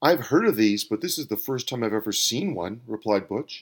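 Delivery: plain reading voice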